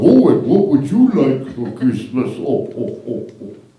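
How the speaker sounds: put-on low, kind, grandfatherly old man voice. The speaker describes how the mall Santa asks children about Christmas: mall Santa's nice old man voice. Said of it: "he talks like a nice old man going".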